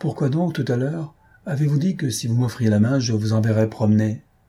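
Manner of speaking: plain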